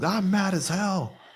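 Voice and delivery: put-on, very high, drawn-out top-of-lungs bellow. Describing a film newscaster's rant: imitating a scream at top of lungs. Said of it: "screaming at the top of his lungs".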